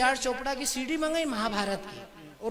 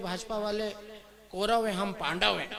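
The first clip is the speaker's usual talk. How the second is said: plain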